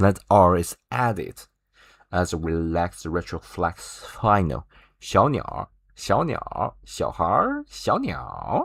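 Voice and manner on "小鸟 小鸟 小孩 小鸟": bad put-on northern Chinese accent, much higher. Speaker teaching chinese pronunciation demonstrates the added r, in a bad northern chinese accent. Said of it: "I'm really bad at northern accents".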